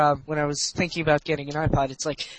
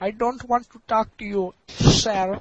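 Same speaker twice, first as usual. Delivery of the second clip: put-on Indian accent; 4 semitones higher than usual. Acting out a call to Xbox tech support, in an Indian accent. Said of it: "even the click was Indian accented".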